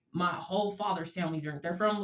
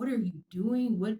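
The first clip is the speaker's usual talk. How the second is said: put-on father's scolding yell; 4 semitones higher, 4 dB louder than usual. Recalling playing with the dog when dad started screaming at them; imitating dad screaming. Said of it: "my dad's just screaming at me".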